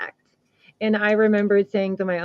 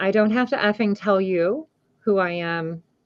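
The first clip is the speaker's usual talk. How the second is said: put-on angry voice. Retelling what a figure said after seeming more angry: imitating an angry reply. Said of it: "he seemed more angry".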